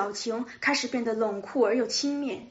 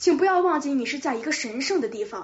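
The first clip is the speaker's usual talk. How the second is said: ordinary delivery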